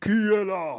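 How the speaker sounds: booming king voice. The king calls out to a frightened visitor, Guinaro's big booming voice. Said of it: "Dit la grosse voix de Guinaro".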